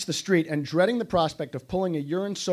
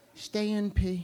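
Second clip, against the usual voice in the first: soft little half-whisper under the breath; 3 semitones higher, 5 dB quieter than usual. Retelling what he half-whispered back when told to hold it in; half-whispered. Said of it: "I heard him whisper".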